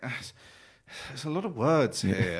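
put-on slow, high, sulky, childish petulant whine. Retelling how he reacted when asked to read the contract: imitating a petulant child. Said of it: "he's like a petulant child".

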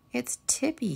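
crying out, pitched very high. Narrator reading Franklin sitting on his bike, crying out. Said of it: "he cried".

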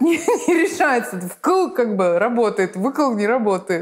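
talking through bubbling laughter. Speaking in a conversation about how the world works, laughing while speaking. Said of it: "(смеясь)".

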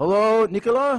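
loud, high-pitched calling shout. In a stage scene, a character calls out for someone; shouting. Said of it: "Don't shout, [name]".

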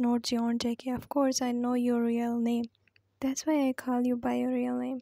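ordinary delivery

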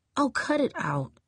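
high, grumbling, muttered under the breath. Reading a story, Jamee brushes off Desmond after his kiss, muttered. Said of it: "Jamee muttered".

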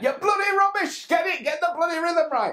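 shrill, high, loud barking scolding shout. Retelling how the man teaching him the bottles shouted at him, retelling a teacher's shouting. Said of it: "he just shouted at me".

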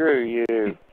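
ordinary delivery

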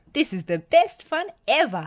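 gleeful, loud, high, spoken through laughter. Narrator reads a character's line as the others chase off after a runaway, laughing. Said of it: "laughed Spud".

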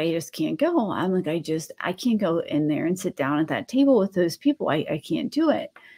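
put-on crying, speaking through tears. Speaker retells calling someone in tears before a meeting, imitating own crying. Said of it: "I'm crying".

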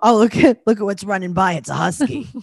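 put-on, horrifying-sounding woman's voice. Acting out a woman the speakers are discussing, imitating her horrifying voice. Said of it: "You sound just like her".

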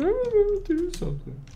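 very high-pitched, mocking imitation voice.

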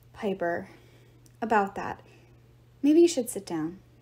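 ordinary delivery

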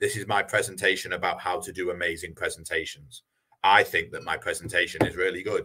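low, flat monotone droning on one unvaried note. Showing a presentation delivered without varied tonality: flat monotone delivery. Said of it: "making sure it's not monotone".

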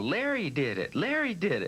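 play-acted children's voices shouting together, high, drawn-out, sing-song. Retelling asking who stopped it, the kids answering, retelling kids shouting. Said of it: "And they all start shouting".

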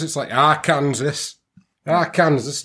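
casual Yorkshire accent. Speaker pronouncing a US state name, in a Yorkshire accent. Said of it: "Don't know why I'm talking a Yorkshire accent".

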